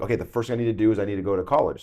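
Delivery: ordinary talk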